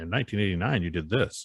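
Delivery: normal talking voice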